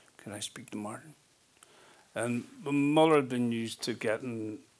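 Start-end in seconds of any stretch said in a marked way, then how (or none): 0.2-1.1 hushed, very soft, spoken out the mouth's corner. Recalling Mickey Rourke phoning his mother's house, imitating Mickey Rourke's soft quiet voice. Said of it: "speaks at the end of his mouth, you know, very quietly, softly spoken".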